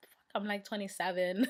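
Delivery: ordinary talk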